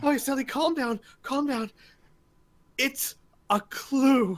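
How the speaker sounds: mock hyperventilating panic. Retelling a murder-mystery scene, acting out a hyperventilating lady, mock hyperventilating panic. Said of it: "one lady who's like hyperventilating".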